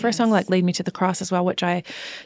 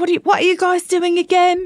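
higher-pitched put-on English accent; 11 semitones higher, 6 dB louder than usual. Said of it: "heard you go Australian to English".

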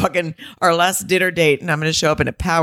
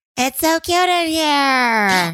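put-on high, very slow baby talk, here drawn out; 9 semitones higher than usual. Retelling a restaurant voiceover, imitating Hannah's baby voice. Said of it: "She just did baby voice".

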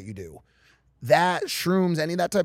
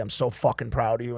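usual speaking voice

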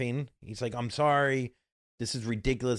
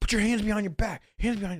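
put-on yelling, pitched higher; 9 semitones higher, 3 dB louder than usual. Retelling a cop's order to put hands behind back: imitating a cop yelling. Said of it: "yelling at me".

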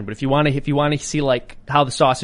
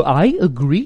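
odd, funny, twisted pronunciation of the word agree; 3 semitones higher, 4 dB louder than usual. Showing how an impression mocks a funny-sounding "agree": Dave Rubin impression. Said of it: "I noticed he said "agree" funny".

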